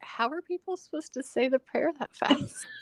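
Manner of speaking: put-on, high, guileless, innocent tone. Retelling husband's question about reading a roadside prayer: imitating Stuart's innocent tone. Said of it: "looked at me so, like, innocently and was like".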